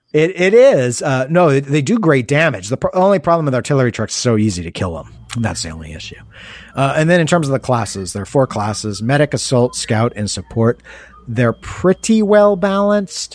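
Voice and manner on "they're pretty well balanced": little odd rising twinge on balanced. Judging whether the four classes are balanced: weird little upward twinge. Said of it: "I say it with that weird little up twinge tick in my voice".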